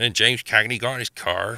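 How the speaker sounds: natural, light English West Country accent. Speaker shows how a line sounds in their own West Country accent. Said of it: "I have a bit of a West Country accent in normal life. So, I mean, no one wants to hear me going".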